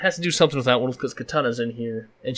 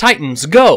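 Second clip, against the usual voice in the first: very loud, full-throated rallying cry; 8 dB louder than usual. Saying a phrase so viewers can judge the likeness: Teen Titans Robin saying Titans go. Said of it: "who I sound like when I say this phrase".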